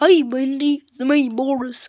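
very loud, goofy character voice. Showing the voice the speaker does for Boris: goofy Boris voice. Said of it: "every time I do this voice, it's my goofy voice".

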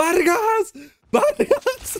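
put-on high-pitched yell.

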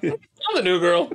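cute quirky high voice. Showing the other speaker a little Zooey Deschanel: Zooey Deschanel impression. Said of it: "You wanna see a little Deschanel?".

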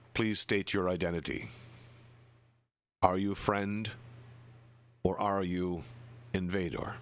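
toneless, flat, level monotone voice. Narrating a scene, the speaker gives the summoned voice's challenge in a flat voice. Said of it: "the flat voice essentially says".

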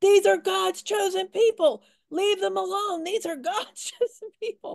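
high-pitched, hollering voice. Quoting a man hollering in a protest video, imitating someone hollering. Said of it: "while he's hollering".

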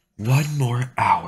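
high, grumbling mutter. The ranger, assigned to nursemaid an old mage, muttered. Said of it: "she muttered".

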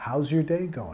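pitch falls low at the end on going. Teaching the question how's your day going: falling pitch at end on going. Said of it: "Bajando de intonación al final".

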